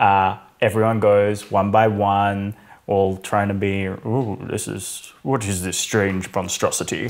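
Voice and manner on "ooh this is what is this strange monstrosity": put-on stern captain voice, puzzled. Retelling how the team tries to do the best Holt impression: Captain Holt impression. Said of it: "do the best Holt impression".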